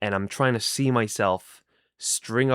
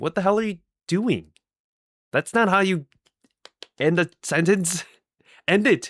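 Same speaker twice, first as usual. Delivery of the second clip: loud, high, scolding yell; 9 semitones higher, 5 dB louder than usual. Describing losing track mid-sentence on screen, retelling yelling at oneself. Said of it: "I'm yelling at myself through the screen".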